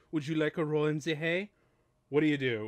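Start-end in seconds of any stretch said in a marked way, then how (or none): 0.1-1.5 put-on cute-sounding German accent. Retelling a woman in a haystack looking him in the eye, in Teri Garr's cute German accent. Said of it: "goes with that cute German accent".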